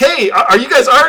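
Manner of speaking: acted yelling. Retelling calling out for the art department on set: imitating own yelling. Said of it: "So it's like yelling".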